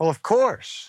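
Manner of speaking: sly, mischievous reply. Giving his standard reply to a familiar question: mischievous smile in voice. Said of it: "You can hear the mischievous smile in his voice".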